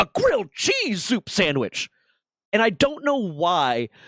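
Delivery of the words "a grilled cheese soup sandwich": put-on high, swooping yelled shout. Retelling what an RDC shouted at a watchstander: imitating someone shouting. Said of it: "another one just shouts".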